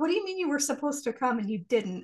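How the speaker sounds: normal talking voice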